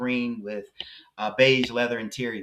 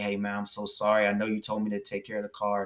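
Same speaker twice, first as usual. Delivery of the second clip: put-on sad, sorrowful voice, quieter; 2 semitones lower, 4 dB quieter than usual. Speaker retelling his friend apologizing about the car, imitating a sad apology. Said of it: "looked at me with a sad face".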